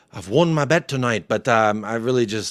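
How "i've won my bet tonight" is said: very poor, bad Irish accent. Reading out a viewer's message aloud: very shitty irish accent. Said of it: "read this in a very shitty Irish accent".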